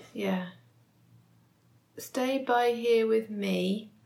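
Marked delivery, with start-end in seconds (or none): 2.0-3.8 slow, put-on English accent. Reading a race checkpoint instruction aloud, in an English accent. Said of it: "Sounds great in an English accent".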